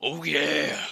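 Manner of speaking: put-on loud, high, drunk-sounding cheer, belted out. Voicing a character in the game: drunk Macho Man voice. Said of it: "Sounds like Macho Man when he gets drunk".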